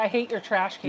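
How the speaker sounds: ordinary talk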